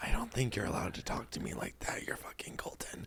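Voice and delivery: soft, unvoiced whisper.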